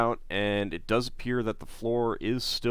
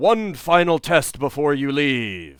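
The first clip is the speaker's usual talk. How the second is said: resounding, booming, wavering, otherworldly magical voice; 4 semitones higher, 7 dB louder than usual. Voicing a magical voice in a chamber: booming wavery magical voice. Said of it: "booms out".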